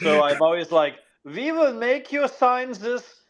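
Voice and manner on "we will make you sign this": put-on German accent with a very high voice. Reading a contract aloud, the speaker uses a put-on German accent. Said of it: "I do it in a German accent".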